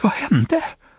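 gasping out. Narrator reads the dog's question to Halidon in a dark backyard, panting. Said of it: "Flämtade hunden".

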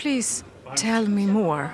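voice dropped slightly, straight-faced. Acting out a reply in a Eurovision conversation: lowering the voice a little. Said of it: "Man liksom sänker rösten lite".

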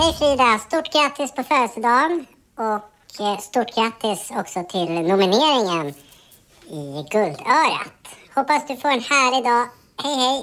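electronically pitch-shifted, altered voice tone. A recorded birthday greeting played back with its pitch changed; pitch-shifted voice. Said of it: "ändra pitchen på rösten".

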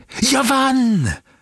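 worked-up voice. A winner calls out from the inner room amid applause, overexcited. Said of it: "Hördes en uppskruvad röst".

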